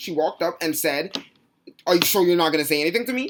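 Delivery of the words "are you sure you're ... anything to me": mock hostile, aggressive, confrontational, loud and fast. Speaker retelling how a woman confronted them, imitating an aggressive challenge. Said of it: "she walked up with all the aggression in the world".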